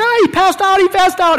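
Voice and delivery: acted-out, high-pitched, frantic, panicked yell. Recounting how a lady yelled after he passed out, retelling a panicked yell. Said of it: "And she's yelling".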